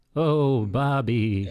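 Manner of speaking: mock creepy pervert character voice. Joking about someone lusting over a painting, in a creepy pervert voice. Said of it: "Pervert voice".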